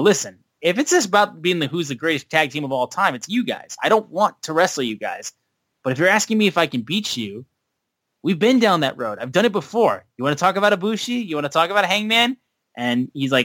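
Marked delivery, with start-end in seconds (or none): none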